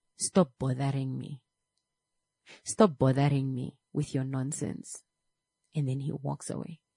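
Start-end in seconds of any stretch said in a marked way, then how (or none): none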